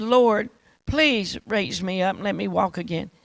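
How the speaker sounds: mock crying, tearful pleading voice. Retelling a mocked paralyzed man's prayer back in his room, imitating his crying plea. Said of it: "he's crying".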